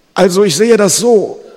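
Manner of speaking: very high, very loud, shrill rattling gasp. A figure whose eye was just stabbed answers his attacker, rattling gasp. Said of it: "röchelte der Umgängliche".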